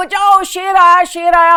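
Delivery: high, loud shouting cry.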